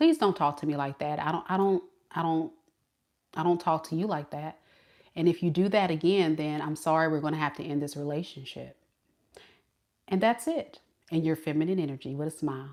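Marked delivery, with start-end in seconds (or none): 0.0-8.8 calm, much lower and quieter, not yelling. Advising women how to answer a man who raises his voice, calm, not yelling. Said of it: "without yelling".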